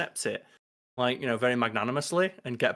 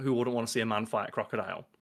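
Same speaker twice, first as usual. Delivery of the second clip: ordinary talk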